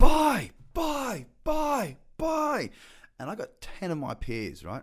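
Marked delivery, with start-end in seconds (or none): 0.0-2.7 very loud, very high, shrill, slow drawn-out screaming. Retelling someone screaming at him to buy, imitating the screaming. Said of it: "sh- screaming at me".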